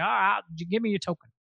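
horrible put-on Boston accent. Recapping this season, quoting Rob's reply to Amber in a horrible Boston Rob impression. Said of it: "that was a horrible Boston Rob".

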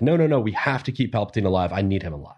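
acted-out desperate begging. Recounting a scene about the Jedi, voicing one character's plea; retelling someone begging. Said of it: "he just flat out is like begging".

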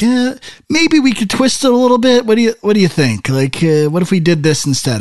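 high, wheedling, coaxing voice. Imitating a generic movie person trying to get someone to cave in. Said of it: "a generic movie person trying to get someone to cave in".

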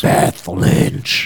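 eerie, spooky put-on voice, slowly intoning. Introducing the in-house psychic medium's name: put-on spiritual voice. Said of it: "Is that a good way to do a spiritual voice?".

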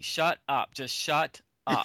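ordinary talk, nothing marked

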